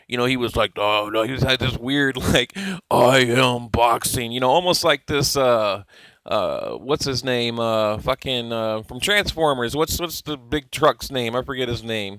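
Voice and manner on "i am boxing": low, deep, mechanical robot voice. Describing a show's narrator, imitating him in a robotic deep voice. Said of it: "he had like this robotic, deep voice".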